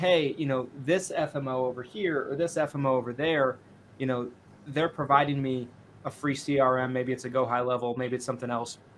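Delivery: ordinary delivery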